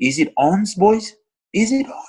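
rallying, rousing shout.

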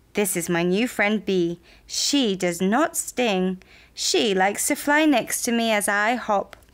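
ordinary delivery

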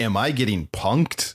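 plain

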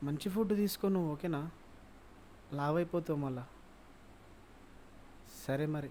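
sweet soft-spoken murmur. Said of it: "ఈడు ఇంత మెల్లగా మాట్లాడతాడు".

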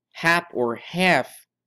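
hap stressed high and slow, as in half.

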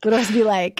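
plain

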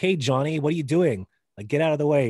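mock mean, grown-up tone with no baby talk. Retelling how one talks to a kid when being mean: imitating own mean tone. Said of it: "if I'm being mean".

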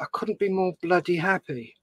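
ordinary talk, nothing marked

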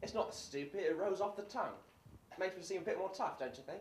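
put-on English accent. In a drama, defending the accent after another character calls it stupid, fake English accent. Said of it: "Why do y'all use that English accent?".

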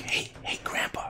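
soft, breathy, barely voiced whisper. Retelling whispering to a driving grandfather from the back seat: imitating a whisper. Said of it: "Why are you whispering?".

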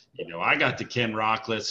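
usual speaking voice

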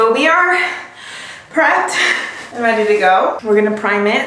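out of breath, breaking off mid-phrase. After running up and down the stairs for supplies, talking while out of breath. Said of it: "I'm out of breath from running up and down the stairs".

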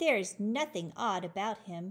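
ordinary delivery, nothing marked

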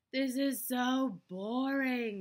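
very slow, high, loud, stretched-out exclaiming voice. Reading a doll's complaint after she pushes away from the window, exclaiming. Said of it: "she exclaimed".

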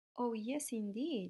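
ordinary delivery, nothing marked

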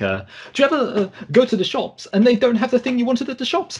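very high, bouncy, rattled-off comedian patter. Doing an impression of a stand-up comedian: Michael McIntyre impression. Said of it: "Here's my impression of Michael McIntyre".

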